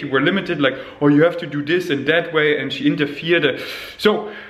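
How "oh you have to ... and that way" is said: plain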